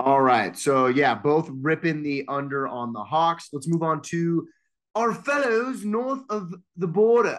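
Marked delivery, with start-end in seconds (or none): 3.5-7.4 put-on British accent, pitched up. Introducing the next team to discuss: put-on british accent. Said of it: "I did a British accent".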